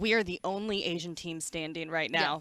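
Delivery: ordinary talk, nothing marked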